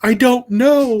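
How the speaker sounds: high, slow, terrified voice.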